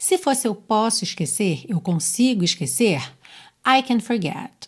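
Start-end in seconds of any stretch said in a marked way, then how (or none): 3.7-4.7 unstressed "can". Teaching English stress in an affirmative sentence, unstressed can. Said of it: "o I e o forget seriam mais fortes".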